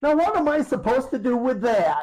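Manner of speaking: acted indignation. Retelling how she answered a silly kid joke, imitating an indignant retort. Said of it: "Just as indignant".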